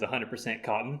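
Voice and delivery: plain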